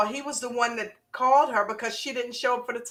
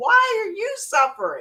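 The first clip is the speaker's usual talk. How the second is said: put-on crying voice, pitched higher; 8 semitones higher than usual. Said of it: "Started crying in the kitchen".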